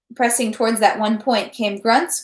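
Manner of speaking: plain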